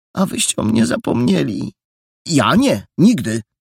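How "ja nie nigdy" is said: sharp, protesting tone. Perełka answering Jola, a sharp protest. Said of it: "zaprotestował ostro perełka".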